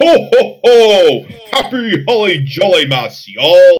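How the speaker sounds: slow jolly tone. Redoing a holiday greeting after calling the first try weak: baritone voice with more oomph. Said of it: "I need to inject some sort of baritone".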